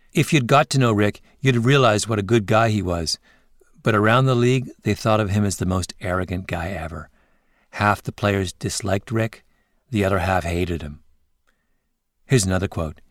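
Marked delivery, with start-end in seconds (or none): none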